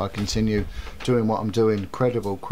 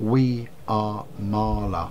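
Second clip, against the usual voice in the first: odd, unnatural, otherworldly spirit voice. Retelling the spirit in a woman giving its name, in a strange voice. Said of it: "in this strange voice".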